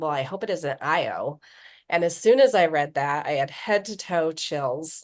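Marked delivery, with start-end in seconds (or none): 0.0-1.4 acted sarcastic tone. Recounting someone's side comment in a story, retelling a sarcastic remark. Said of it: "kind of sarcastically".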